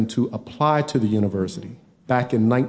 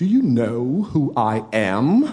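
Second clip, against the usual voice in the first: very dignified, stately, distinguished voice, drawn-out am. Retelling what a woman said to the speaker, [name]: very distinguished voice. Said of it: "in a very distinguished voice".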